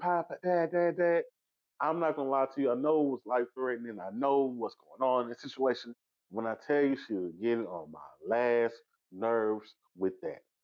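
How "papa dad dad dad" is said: mock girl's screaming, high, drawn-out wailing cry. Recounting a scene where a girl screams for her passed-out dad, imitating a girl screaming.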